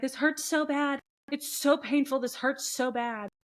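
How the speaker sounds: loud, high scream of pain. Retelling a storm chaser's recording of him in pain: imitating someone screaming in pain. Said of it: "And he's just screaming".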